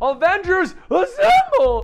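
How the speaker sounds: put-on voice crack. Retelling a recording mishap, the speaker re-enacts the line: imitating own voice crack. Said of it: "Total voice crack and everything".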